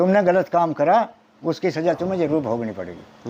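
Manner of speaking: usual speaking voice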